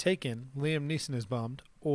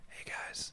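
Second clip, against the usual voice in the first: soft ASMR whisper, quieter. Trying out an ASMR episode for the viewers: ASMR whisper. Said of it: "We should do an A S M R episode".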